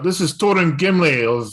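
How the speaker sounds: calling out loudly, like hailing. Player's character calls out an answer to 'Who goes there?', yelling. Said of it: "I yell out".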